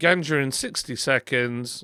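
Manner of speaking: stress on the word ganja. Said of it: "what they did there instead of".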